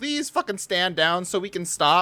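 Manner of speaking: almost begging, pleading tone. Describing a demand that the prime minister stand down, imitating someone begging. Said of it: "It sounds like he's almost begging".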